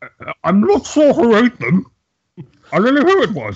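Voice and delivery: put-on high, loud speech through a stuffed mouth. Answering in character with a completely full mouth: in character, mouth full. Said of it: "my mouth is completely full".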